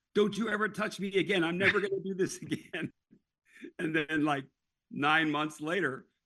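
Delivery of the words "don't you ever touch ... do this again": mock, high-pitched, screamed outburst. Retelling a wife in childbirth yelling at the husband: imitating a wife screaming. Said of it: "she's screaming at the husband saying".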